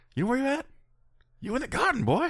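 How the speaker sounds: very high, squeaky, swooping cartoonish voice. Quoting the referee's line to a knocked-out wrestler: Earl Hebner impression. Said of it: "Earl Hebner".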